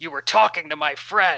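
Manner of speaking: growled, pointed delivery. Voicing Jonathan in a shared story, speaking to another character: Jonathan growling. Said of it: "Jonathan growls at him like".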